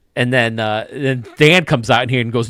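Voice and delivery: ordinary talk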